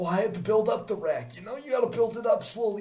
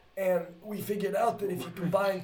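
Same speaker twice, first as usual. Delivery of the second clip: ordinary delivery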